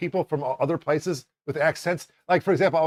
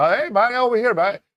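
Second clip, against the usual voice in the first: put-on Jamaican accent, pitched higher; 7 semitones higher, 4 dB louder than usual. Retelling directing a person from Jamaica: imitating a Jamaican accent. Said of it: "someone from Jamaica".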